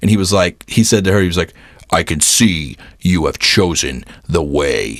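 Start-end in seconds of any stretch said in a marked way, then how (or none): 1.9-5.0 dead-serious, intense, slow delivery laid on heavy. Retelling what a costumed performer said in character: imitating intense Kylo Ren. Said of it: "he was super intense in character".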